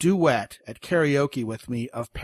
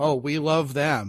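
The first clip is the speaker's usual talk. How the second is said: sarcastic, mocking tone; 2 semitones higher than usual. Joking about dating profiles that say don't bother: sarcastic. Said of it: "And I'm being sarcastic".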